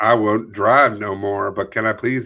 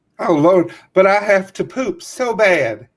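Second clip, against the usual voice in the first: very high, irate, angry Southern woman's voice; 9 semitones higher than usual. Performer reads a stopped driver's lines to a police officer, angry Southern woman voice. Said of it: "read this as a Southern woman who is angry".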